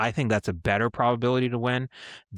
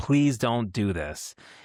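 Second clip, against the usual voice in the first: mock pleading, acted-out begging. Recalling watching a football game, retelling own pleading. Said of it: "and like literally pleading".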